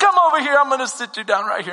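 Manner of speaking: put-on New York accent in a woman's voice. Retelling what a lady said to him, in a new york accent. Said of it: "In this New York accent".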